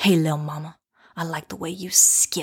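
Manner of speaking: mock lascivious, leering, lecherous tone. Retelling what a man said to the speaker while skipping, imitating a lascivious catcall. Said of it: "he says to me with all this like lasciviousness".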